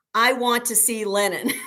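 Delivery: yelling out loud. Recounting a soldier raising his rifle butt at him, the speaker is retelling a yell. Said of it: "and then I just yell out in Russian".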